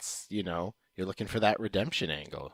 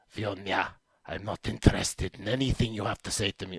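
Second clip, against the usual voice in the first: guttural, growling, vaguely Eastern European accent. Demonstrating the voice they were working on, vaguely Eastern European guttural growl. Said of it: "vaguely Eastern European with something of a guttural growl".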